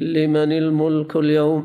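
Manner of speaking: normal talking voice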